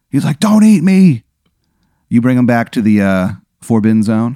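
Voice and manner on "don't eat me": very high, loud, desperate pleading. Voicing a man about to be eaten: pleading for his life. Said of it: "he's pleading for his life".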